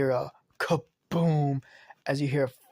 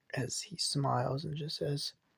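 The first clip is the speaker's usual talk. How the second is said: normal talking voice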